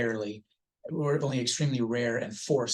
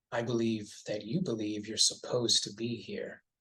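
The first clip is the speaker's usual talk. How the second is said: imitated reassuring voice. Describing a fiction character's reply to a woman's question, imitating a reassuring voice. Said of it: "in the most reassuring voice on earth".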